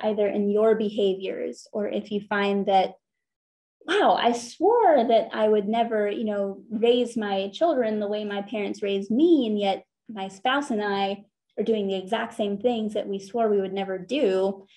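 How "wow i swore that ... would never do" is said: ordinary talk, nothing marked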